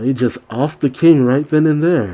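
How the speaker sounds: plain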